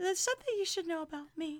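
very high, mocking put-on voice. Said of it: "That's what Giannina sounds like".

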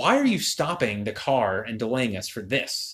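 ordinary talk, nothing marked

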